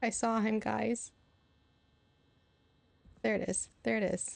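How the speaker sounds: frightened, alarmed, scared exclamation. Playing a game alone outside at night and spotting a figure: scared. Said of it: "I'm scared".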